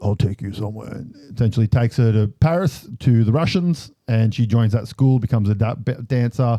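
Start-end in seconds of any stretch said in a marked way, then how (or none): 0.0-0.9 put-on deep bass voice. Retelling a movie scene where a man turns up at the hospital: deep put-on voice. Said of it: "Deep voice".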